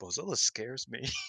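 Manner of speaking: hushed, soft mutter under the breath. Retelling a commentator's quiet aside during a match: imitating Sonny muttering under breath. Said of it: "Sonny just under his breath was like".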